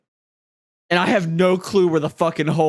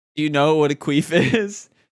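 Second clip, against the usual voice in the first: normal talking voice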